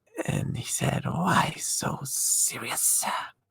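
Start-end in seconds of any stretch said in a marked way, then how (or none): 1.1-3.1 snakelike voice, pitched much higher. Acting out a quoted line for a listener, snakelike voice. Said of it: "sounds like a snake".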